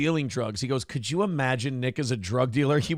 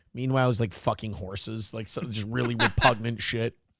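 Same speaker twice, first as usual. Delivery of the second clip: ordinary talk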